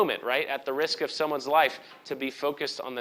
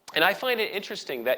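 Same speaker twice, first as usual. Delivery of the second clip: normal talking voice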